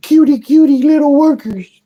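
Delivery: squeaky, very high, bad cutesy voice. Speaker voices a gushing reaction to the worker ants, bad cutesy impression. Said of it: "bad impression".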